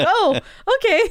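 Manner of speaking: high, bemused, amused and surprised tone.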